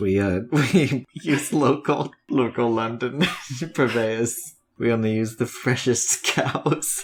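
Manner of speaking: words broken up by laughter. Answering a question about where the kitchens get their food: laughing while talking. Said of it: "That's why I'm laughing".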